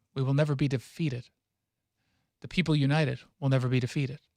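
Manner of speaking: ordinary talk, nothing marked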